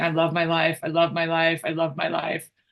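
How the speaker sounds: heavily sarcastic, acted out, said over and over. Recounting what she said in the car with her husband, retelling it sarcastically. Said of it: "very sarcastically saying".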